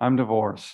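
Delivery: very low, quiet, shamefaced, ashamed tone. Recalling the day a woman confided in the speaker; retelling quiet, ashamed words. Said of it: "she said in a quiet way, and as if she were ashamed".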